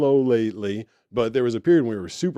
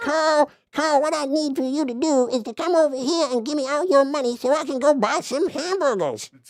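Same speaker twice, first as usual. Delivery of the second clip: squeezed, very high-pitched oddball cartoon voice. Speaker imitates a character from a cartoon show: Meatball voice. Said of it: "That's Meatball".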